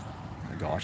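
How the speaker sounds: soft, quiet, embarrassed whisper.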